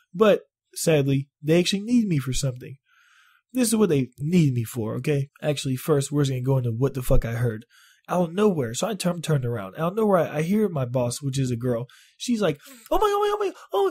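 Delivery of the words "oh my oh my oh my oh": put-on panicked, freaking-out voice, higher. Retelling how the boss suddenly called for help: imitating boss freaking out. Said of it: "I starts freaking out".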